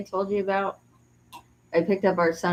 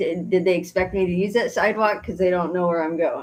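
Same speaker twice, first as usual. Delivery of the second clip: ordinary talk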